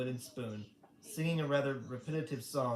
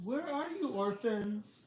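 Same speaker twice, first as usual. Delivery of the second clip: high, slow, scratchy, drawn-out call; 10 semitones higher than usual. Reading a story aloud, Count Olaf calls out for the orphans, Count Olaf's scratchy voice. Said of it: "Count Olaf called out in his scratchy voice".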